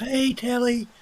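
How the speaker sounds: very high, odd, weird little voice. Retelling a man on a hill calling down to Telly golfing: weird little high voice. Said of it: "in that weird little high voice".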